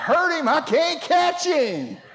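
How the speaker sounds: mock, shrill, very high hollering yell. Retelling a childhood chase, father answering the mother's pleas: imitating Herman hollering back. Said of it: "I hear my daddy holler back".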